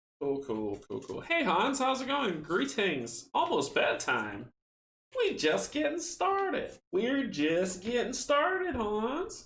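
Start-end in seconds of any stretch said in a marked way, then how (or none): 5.2-9.5 very high-pitched, swooping, fake country accent. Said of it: "That's my country".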